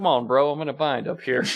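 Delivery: really subdued, deflated voice, all fun gone. Retelling what a man stuck up in the air told the other man, imitating a subdued voice. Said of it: "in this really subdued voice".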